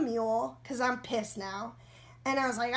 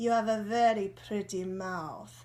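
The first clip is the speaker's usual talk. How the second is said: put-on Italian-sounding accent; 4 semitones lower than usual. Retelling what a man said just before he tried to kiss them, Italian-sounding accent. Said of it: "this accent sounds like um, he's Italian".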